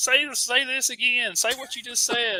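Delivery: put-on high, loud, amazed gushing, Northern accent.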